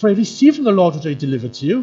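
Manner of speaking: fed-up, exasperated, very loud and high-pitched. Voicing Paul's words to the Corinthians from the text, exasperated. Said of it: "his tone of voice would be".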